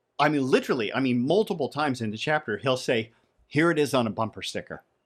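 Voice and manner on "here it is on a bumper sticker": normal talking voice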